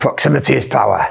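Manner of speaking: rough, creaky, raspy put-on voice. Asked to say the line, doing a Tony Robbins voice. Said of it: "That sounds like Tony Robbins".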